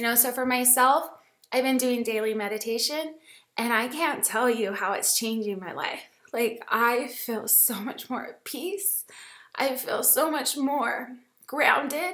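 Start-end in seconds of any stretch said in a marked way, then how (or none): 6.7-12.1 tearful, crying voice while speaking. Telling listeners how daily meditation has changed things, crying. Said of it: "And I'm crying".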